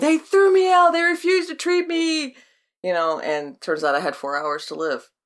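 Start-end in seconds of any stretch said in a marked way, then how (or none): 0.0-2.4 very high, shrill, frantic, overdramatic movie-style yell, acted. Retelling telling the hospital staff what happened: imitating own shouting.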